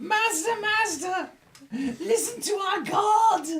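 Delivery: very high, shrill, terrified, cowering goblin cry. A game master voices goblins cowering back against the walls: terrified cowering goblins. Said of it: "all the goblins cower back against the walls".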